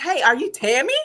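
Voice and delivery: acted eager excitement. Retelling how she asked at checkout: imitating someone excited. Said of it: "she was just so excited".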